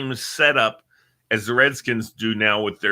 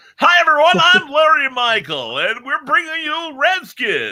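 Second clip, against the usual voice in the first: fake announcer voice, very high-pitched and loud; 5 dB louder than usual. Mocking a disliked announcer who talks with a fake voice: imitating Larry Michael's fake voice. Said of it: "guys who talk with fake voices".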